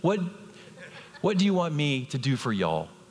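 put-on Texas accent. Speaking to a church, repeat the question put to it this morning, in a put-on Texas accent. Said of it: "He probably had a Texas accent".

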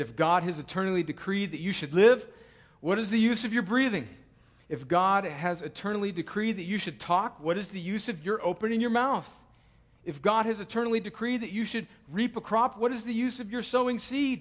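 sarcastic, mocking tone with a sarcastic edge. Quoting a theologian's rhetorical questions aloud: quoting sarcastically. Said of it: "he kind of says it sarcastically".

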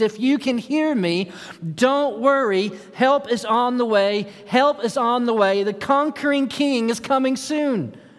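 acted-out high, pleading yell. Picturing someone running to the shore calling to everyone in earshot: acting out yelling and pleading. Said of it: "they start yelling and pleading out loud".

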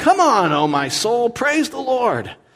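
rousing, high, drawn-out yell. Preacher acting out the writer urging his own soul; mock yelling at oneself. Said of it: "he's like yelling at himself".

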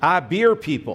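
put-on very strong, rural Georgia Southern accent. Retelling what a bearded man in overalls answered when asked his job, in a very Georgia accent. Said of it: "in a very Georgia accent".

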